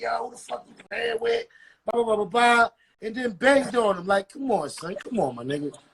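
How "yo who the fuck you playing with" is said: mock tough-guy voice, hard and confrontational. Retelling someone's reply to a joking threat, imitating someone acting tough. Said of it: "Slime tried to get hard".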